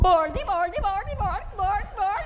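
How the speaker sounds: loud, slow, put-on Swedish accent, Swedish-sounding nonsense babble. You demonstrate a quick accent for listeners who have not heard it, Swedish accent like the Swedish Chef. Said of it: "it is much like this".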